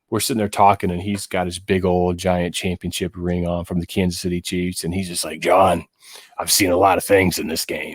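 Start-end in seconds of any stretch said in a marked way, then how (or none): 5.4-7.9 badly done put-on raspy voice. Retelling what a man with a Chiefs championship ring told him, in raspy Ed Podolak voice. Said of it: "in his raspy voice".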